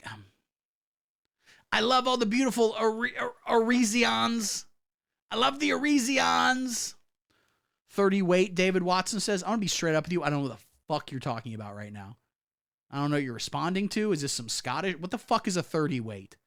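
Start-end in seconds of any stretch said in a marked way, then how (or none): 1.7-6.9 mangled, slow, drawn-out, raised-pitch drawl. Talking about Arizona voters, the speaker does a Donald Trump impression. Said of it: "impression of what I think him saying Arizonans".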